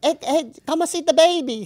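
put-on Chinese accent, high-pitched. Repeating own commercial line when asked the accent: imitating a put-on Chinese accent. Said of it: "It was a Chinese".

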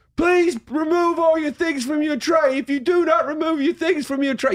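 very high, sassy holler. Comparing airport screening in Canada and America: imitating a sassy yelling woman. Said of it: "sassy woman yelling at you".

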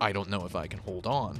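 ordinary talk, nothing marked

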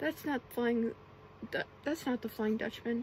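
plain reading voice

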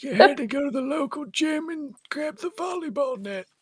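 put-on elderly man voice.

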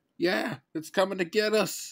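very high, loud, keening wail. Narrating a story, Robbie answers Benjamin's scolding in the forest clearing: wailed. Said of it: "Robbie wailed".

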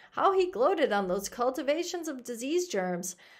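plain reading voice

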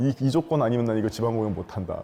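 ordinary delivery

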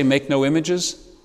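usual speaking voice

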